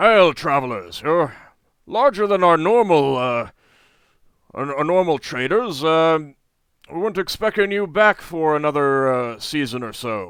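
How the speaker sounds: very loud, booming giant voice. Narrating a giant bending down to greet travelers, very loud giant voice. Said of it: "says in a very loud voice".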